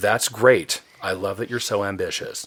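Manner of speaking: patronizing, talking-down, condescending tone. Retelling an editor's reply to a huge first draft: imitating condescending tone. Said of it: "very condescending".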